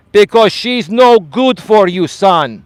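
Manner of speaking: put-on heavy Greek accent, laid on thick, loud, high. A son quotes his father's answer to him, in a thick greek accent. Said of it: "with his thick Greek accent".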